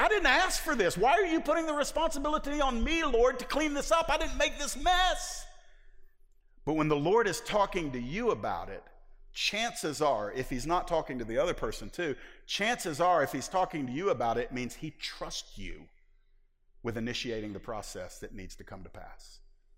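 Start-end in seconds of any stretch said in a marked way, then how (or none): 0.0-5.5 high, indignant tone.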